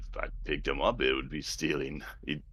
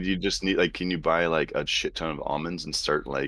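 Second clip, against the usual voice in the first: ordinary delivery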